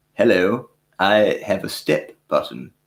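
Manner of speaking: bad, terrible put-on British accent. Host asks how to say a word in the UK, then tries a terrible UK accent. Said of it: "That was my terrible U K accent".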